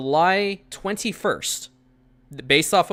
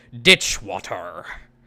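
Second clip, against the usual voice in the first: very deep, low captain voice; 7 semitones lower than usual. Repeating a line the way the captain says it, saying it like the captain. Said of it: "I have to say it like the captain does".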